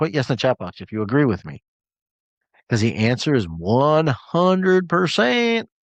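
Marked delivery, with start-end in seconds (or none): 3.4-5.6 slow, put-on Texas drawl on every word. Speaker answering his own question to a live chat audience, in a Texan accent. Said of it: "That's my Texan for you".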